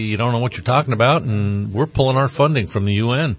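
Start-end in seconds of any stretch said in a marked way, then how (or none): none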